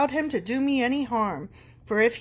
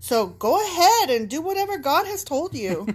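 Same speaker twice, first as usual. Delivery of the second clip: sassy, cheeky, pitched-up delivery; 4 semitones higher than usual. Ending a message to Dad about the family wealth, sassy, cheeky tone. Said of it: "I really gave them some sass".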